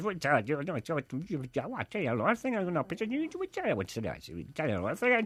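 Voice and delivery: quick Derry accent. Asked by a co-host to do the Derry accent for a laugh, fast Derry accent. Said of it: "do the Derry accent, the one that is fast and hard to understand".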